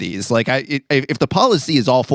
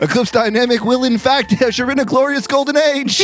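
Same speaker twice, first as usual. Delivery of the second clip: grand, very high, ringing shout; 14 semitones higher than usual. Recounting a phone call, the speaker retells what he shouted out: retelling a shout. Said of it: "but I shout out".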